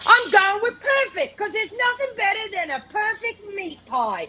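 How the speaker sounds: put-on British accent, quick and high-pitched. Redoing the take, the speaker says the line again in a british accent. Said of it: "when you did that accent".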